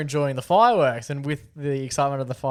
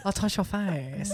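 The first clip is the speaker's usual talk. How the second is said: put-on baby talk, higher and quieter; 6 semitones higher, 6 dB quieter than usual. Retelling a man on a tram FaceTiming his baby: imitating a man's baby talk. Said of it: "he was just doing, like, baby talk".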